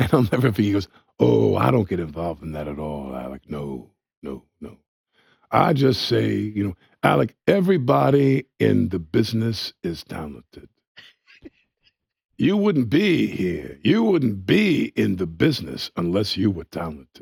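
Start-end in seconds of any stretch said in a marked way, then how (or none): 1.2-17.2 swooping, animated voice with wide pitch swings. Retell what he said to Alec about people in the business, in an excellent Pacino voice. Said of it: "excellent Pacino voice".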